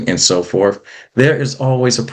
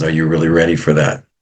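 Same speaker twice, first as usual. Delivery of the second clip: put-on raspy, deep voice, pitched lower; 3 semitones lower than usual. Retelling a father asking his son about going pro: Shaquille O'Neal raspy deep voice. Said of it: "in his raspy, deep voice and says".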